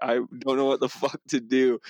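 put-on panicked voice. Retelling flipping a Sea-Doo far out, quoting own words: imitating own past panic.

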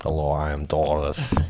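put-on deep voice of a woman. Asked if the woman he met talked like that, speaker is imitating Doris's deep voice. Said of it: "deep voice?".

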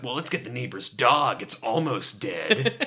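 drop into a deep, evil baritone. Retelling a young killer's suggestion, a speaker does a mock-evil Gob Bluth voice. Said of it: "That real evil, deep baritone voice".

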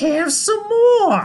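squeaky cartoon yelp, very high, very loud, shrill squeal. Recalling the cartoon's Toad character, doing his shrill Toad voice. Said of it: "when Toad, ... he just goes".

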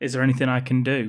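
ordinary talk

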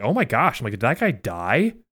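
put-on, mock, half-sarcastic tone. Retelling his reaction to a player falling over during a game: half-sarcastic. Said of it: "half sarcastically".

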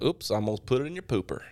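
put-on light touch of American southern accent. Repeating an old line of their own when asked: a little Southern accent. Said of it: "it sounded southernish".

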